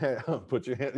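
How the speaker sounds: ordinary delivery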